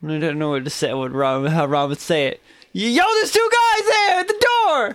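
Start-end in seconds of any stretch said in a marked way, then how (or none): 2.7-5.0 bold yell, much higher pitch. A game narrator voices a shout heard through the combat, Ron yelling out clear and bold. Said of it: "you all hear a voice yell out".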